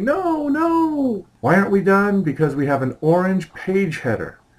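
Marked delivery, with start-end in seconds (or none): 0.0-1.3 high-pitched mock scream. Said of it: "all of you out there are screaming".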